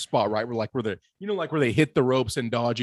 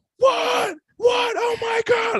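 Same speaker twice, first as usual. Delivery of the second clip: put-on freaked-out yelling, much higher, slower; 4 dB louder than usual. Describing a man freaking out when Lesnar came out, retelling a yell. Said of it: "he's yelling".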